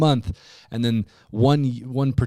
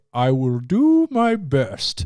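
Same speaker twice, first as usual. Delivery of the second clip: very drawn-out, slow, swooping put-on voice; 2 semitones higher than usual. Retelling how a friend playing Santa answered kids' gift requests: imitating Zach's Santa voice. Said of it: "in that voice".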